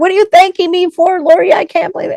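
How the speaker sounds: put-on shrill, very high-pitched screaming. Retelling how Kay screamed back at her: imitating Kay screaming. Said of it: "she screamed at me even louder".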